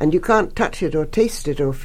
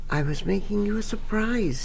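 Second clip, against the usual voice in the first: secretive, confidential half-whisper, pitched up; 5 semitones higher, 5 dB quieter than usual. He confides a secret to his listener, half-whispering confidentially. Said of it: "he whispered confidentially".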